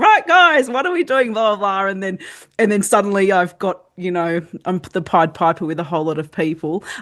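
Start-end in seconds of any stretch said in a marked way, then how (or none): 0.0-1.9 play-acted bounding, energetic, high, swooping excited call. Retelling bounding out to the field to get kids going: imitating an excited, energetic call. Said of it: "go bounding out to the field".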